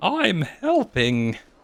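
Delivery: high, crackly, cracking, breaking voice. Giving a voice to an in-game helper who got in the way: crackly, breaky voice. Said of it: "give him a real crackly, breaky voice".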